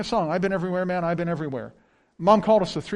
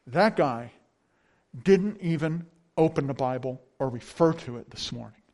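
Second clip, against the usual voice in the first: mock let-down, utterly scornful, disdainful tone; 5 semitones lower than usual. Recalling driving away from church, the speaker acts out his dad's disappointed disdain. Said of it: "a blend of disappointment and utter disdain".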